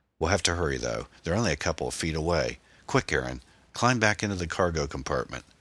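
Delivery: plain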